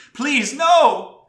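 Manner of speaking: shrill, very high, very loud female cry. A storyteller voicing a creature that mimics voices, crying out in a female voice. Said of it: "it cries out in, in, a, in a female voice".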